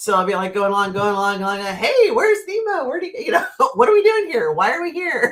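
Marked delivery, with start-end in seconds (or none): 1.7-5.3 very high-pitched cartoon voice, swooping up and down. Showing how friends see the speaker, acting like Dory from Finding Nemo. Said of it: "they would call me Dory".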